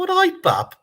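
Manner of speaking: put-on mimicked Birmingham accent. Retelling how a partner's Birmingham family greets people: imitating Birmingham in-laws' greeting. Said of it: "They go".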